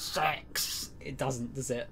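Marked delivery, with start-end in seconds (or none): 0.0-0.9 spooky, menacing put-on scary voice. Streamer trying out a word in a put-on voice: scary voice on 'six'. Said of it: "Saying six with a scary voice doesn't work too well".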